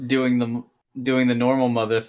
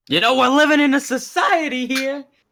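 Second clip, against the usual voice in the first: very high, cracking voice; 4 dB louder than usual. Echoing another speaker's line with a George Costanza voice crack. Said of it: "That was my voice crack, George Costanza".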